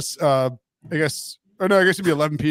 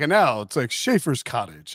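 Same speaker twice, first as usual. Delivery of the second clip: put-on football announcer promo voice, lower; 4 semitones lower than usual. Retelling a football announcer's promo read during a game: imitating an announcer reading a promo. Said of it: "he's like".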